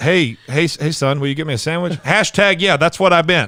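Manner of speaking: put-on old grandpa voice. Imitating a grandfather who uses hashtags: imitating a grandfather. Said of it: "you sound like my grandfather".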